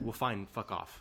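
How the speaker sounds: plain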